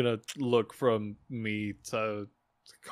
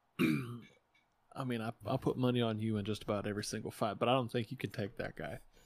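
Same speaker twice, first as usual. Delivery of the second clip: hushed, leaning-in half-whisper; 5 dB quieter than usual. Leaning over to Domino in character to warn about a fighter: half-whispering.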